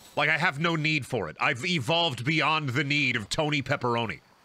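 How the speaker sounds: ordinary delivery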